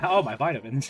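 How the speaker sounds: put-on teasing caricature of an old man voice. Teasing the other player by repeating their words: imitating an old man voice. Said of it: "You sound like such an old man".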